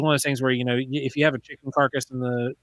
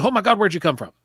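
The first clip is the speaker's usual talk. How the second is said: sudden, high-pitched scream; 6 semitones higher, 4 dB louder than usual. Retelling how she reacted on seeing him: imitating someone screaming. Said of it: "she screams at me".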